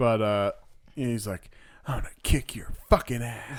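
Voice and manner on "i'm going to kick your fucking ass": almost whispered, barely voiced, under the breath. Retelling what the guy with a gun said: imitating an almost-whisper. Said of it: "almost whispered it a little bit".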